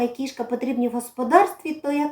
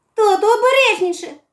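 worried, anxious, much higher pitch; 7 semitones higher, 6 dB louder than usual. The son calls out to his father as a mouse runs out, worried. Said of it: "захвилювався Дасик".

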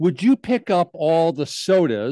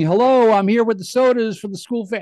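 raised, pitched-up shouted yell; 7 semitones higher, 4 dB louder than usual. Speaker recounts arriving with sodas for the school fair, retelling a yell. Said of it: "And I'm yelling".

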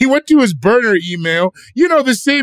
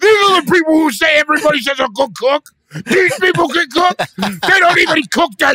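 mock furious man's voice, higher; 5 semitones higher than usual. Imitating a listener who wrote in about washing chicken: imitating an angry listener. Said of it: "he's so mad".

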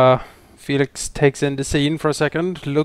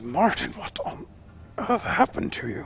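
soft, whispered mumble under the breath; 4 semitones higher, 7 dB quieter than usual. A player's character crouches to inspect the bodies, mumbling. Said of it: "And he mumbles".

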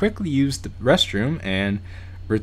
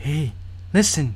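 gentle, lovely put-on feminine voice; 4 semitones higher than usual. Voicing a faint voice calling out to the speaker, in a put-on feminine voice. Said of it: "It's a very feminine voice".

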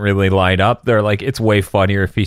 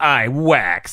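utterly self-satisfied, maximally smug delivery; 4 semitones higher than usual. Quoting the US dub line, imitating Krillin's smug voice. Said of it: "in the most smug voice possible".

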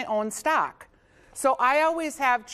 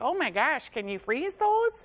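put-on Minnesotan-accented voice; 4 semitones higher than usual. Voicing a curious viewer's question, Minnesota accent. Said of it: "That's my Minnesota accent".

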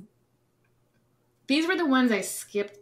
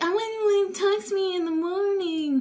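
high mock girl voice. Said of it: "girls are like".

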